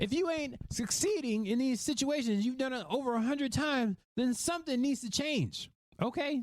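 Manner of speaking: voice climbing very high with passion, impassioned push. A podcast host speaking to listeners, passionate, voice getting higher. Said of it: "My voice is getting higher because I'm very passionate".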